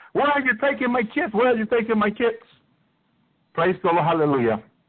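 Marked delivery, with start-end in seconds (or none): 0.2-2.4 pitched-up, repeated yelling. Retelling a dream where the wife yelled at military people: imitating someone yelling. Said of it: "My wife immediately was yelling".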